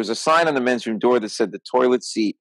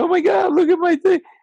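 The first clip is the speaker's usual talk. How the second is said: mock, very high-pitched, tearful crying plea; 4 dB louder than usual. Retelling a bar fight where a girlfriend cries: imitating someone crying. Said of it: "his girlfriend's crying".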